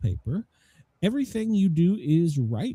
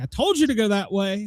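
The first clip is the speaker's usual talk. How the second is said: high-pitched woman's voice; 6 semitones higher, 3 dB louder than usual. Voicing the woman passenger scolding the driver: imitating a woman passenger. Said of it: "she's like".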